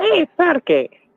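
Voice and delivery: put-on meerkat voice with Russian accent. After hearing that meerkats talk with a russian accent, a speaker tries it: russian meerkat accent. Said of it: "meerkats talk with a Russian accent".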